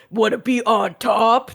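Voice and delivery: very slow, gruff male voiceover voice. Describing a show's intro, quoting the added line in a gruff man voice. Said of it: "they added a gruff man voice going".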